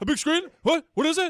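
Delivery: very high, squeaky, mumbled put-on voice. Asking about the Sphere as a joke: mumbled put-on impression. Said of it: "I don't know who you're doing an impression of there".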